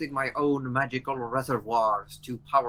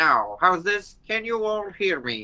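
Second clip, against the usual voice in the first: put-on voice sounding like an old AM radio; 5 semitones higher, 4 dB louder than usual. Voice coming through a golem's face, like an old am radio. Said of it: "like an old AM radio, you hear coming through the face".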